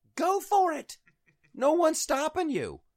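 mock furious scream, very high and loud. Retelling shouting at the TV about billionaires: imitating own screaming. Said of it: "I'm screaming at the T V".

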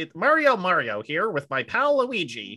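slow, drawn-out video-game character voice. Joking about a live action film, doing a Mario voice. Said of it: "hear what the fuck they do with the voice".

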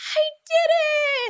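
very high scream, "did" drawn out. Retelling how he screamed to himself: imitating someone screaming. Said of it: "he just screamed to himself".

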